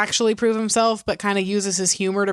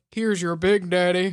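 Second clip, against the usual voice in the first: very deep, low voice in deepest bass register. Retelling how a waiter served the cake: imitating a very deep voice. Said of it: "has the deepest voice".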